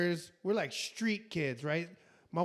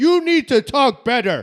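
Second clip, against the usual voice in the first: loud, booming caveman-style bark; 7 semitones higher, 15 dB louder than usual. Retelling how he talks to people he disagrees with, in a caveman voice. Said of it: "I know I sound like a caveman talking".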